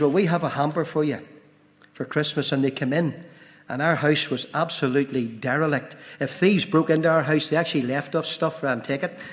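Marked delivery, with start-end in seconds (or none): none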